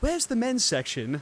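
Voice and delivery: put-on British accent. Retelling what the speaker's companion asked a woman in a store, in a british accent. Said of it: "in a British accent".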